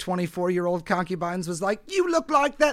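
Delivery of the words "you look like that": sudden, high-pitched, put-on cockney accent. Imagining a young concubine's line, spoken in a Cockney accent. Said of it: "why am I doing a cockney voice?".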